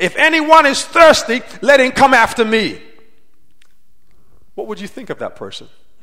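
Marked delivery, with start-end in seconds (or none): 0.0-2.8 very loud, drawn-out, proclaiming cry. A preacher acts out a member interrupting a communion service: loud crying out. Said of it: "with a loud voice and just started, you know, crying".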